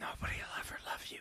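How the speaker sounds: put-on whisper. Retelling a scene from a dream, imitating a whisper. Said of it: "whispering to him".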